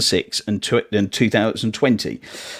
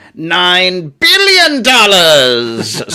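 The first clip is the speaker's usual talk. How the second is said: loud, booming, swooping villain voice, "nine" stretched out; 7 semitones higher, 7 dB louder than usual. Quiz host revealing the answer as instructed, Doctor Evil voice. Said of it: "I've been instructed to say it like Doctor Evil".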